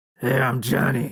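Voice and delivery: put-on eighty-year-old smoker voice. Voicing the character Johnny when asked how to sound: eighty-year-old smoker voice. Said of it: "a little less, like, uh, eighty-year-old smoker".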